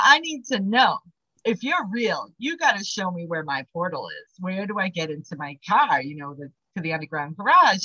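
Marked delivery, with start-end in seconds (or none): none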